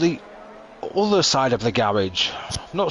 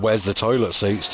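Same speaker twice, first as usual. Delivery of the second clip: plain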